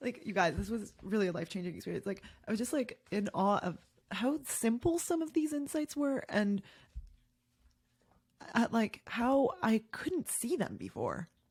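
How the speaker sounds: tearful, choked-up voice.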